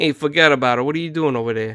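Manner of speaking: put-on Italian-American Brooklyn accent. Showing how their dad used to talk, in an Italian-American Brooklyn accent. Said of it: "like Italian American Brooklyn English accent".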